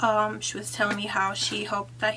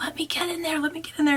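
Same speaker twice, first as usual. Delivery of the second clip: mock screaming, much higher; 7 semitones higher than usual. Retelling a man's outburst while others refused him, retelling a man's screaming. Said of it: "And he was screaming".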